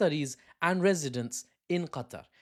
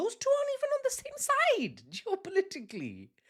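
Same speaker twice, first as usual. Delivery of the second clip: voice creeping higher and higher, high and swooping. Talking to his viewers, speaking in a high-pitched voice. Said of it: "look how high my voice has gone".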